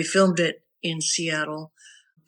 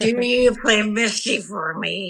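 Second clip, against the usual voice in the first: put-on drunk old man voice, higher; 4 semitones higher than usual. Retelling a bar request from an old guy: imitating a drunk old guy. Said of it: "some old guy would get really plastered".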